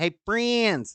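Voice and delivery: thickest put-on high southern twang. Streamer greets Discord friends before a trivia game: southern twangy voice. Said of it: "in my most southern twangy voice".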